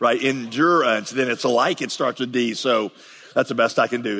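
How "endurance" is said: endurance with heavy stress on the syllable dure. Explaining a sermon's alliterating word list: heavy stress on dure in endurance. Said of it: "if you put the emphasis on dure".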